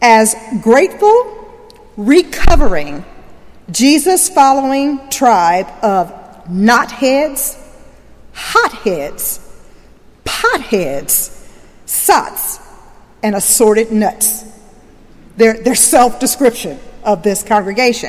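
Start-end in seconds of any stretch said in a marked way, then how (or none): 0.0-14.4 slow, deliberate, word-by-word delivery, each word separated. Speaker reading a congregation's self-description aloud, said slowly, word by word. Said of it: "I'm going to say this slowly so you can get each word".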